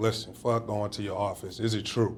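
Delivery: ordinary delivery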